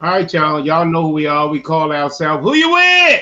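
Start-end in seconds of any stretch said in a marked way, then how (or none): 2.4-3.2 very high, very loud, belted comic voice. Introducing the show's name to listeners, Bernie Mac voice. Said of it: "in my Bernie Mac voice".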